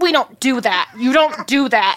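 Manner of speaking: words squeezed out through clenched teeth, jaw locked. Retelling how a woman who caught them spoke, imitating talking through teeth. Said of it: "talking through her teeth".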